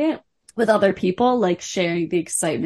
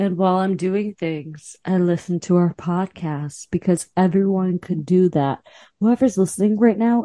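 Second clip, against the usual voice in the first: put-on hypnotic voice. Urging whoever is listening to play the podcast: put-on hypnotic voice. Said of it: "I'm using this voice because I'm trying to be hypnotic".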